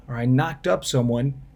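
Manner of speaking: ordinary talk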